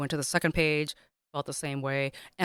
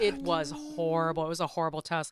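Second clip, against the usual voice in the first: usual speaking voice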